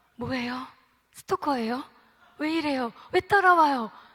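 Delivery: startled, alarmed.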